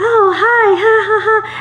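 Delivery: very high, giggly, bubbly, likable voice.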